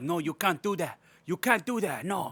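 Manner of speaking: put-on over-the-top Mexican accent. Retelling a movie scene, imitating Douglas with an overly Mexican accent. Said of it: "I'm giving him an overly ... overly Mexican".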